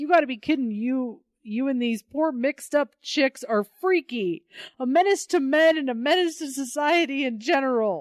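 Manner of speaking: put-on, high, pissy, irritated, ranting angry shout. Recapping a story, acting out a character's angry outburst: retelling an angry yell. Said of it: "he's like yelling at this".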